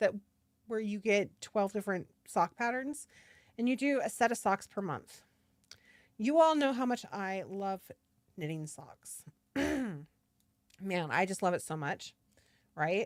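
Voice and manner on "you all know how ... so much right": heavily sarcastic fake enthusiasm, swooping sing-song. Claiming to love knitting socks to the audience: sarcastic. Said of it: "That's sarcasm, by the way".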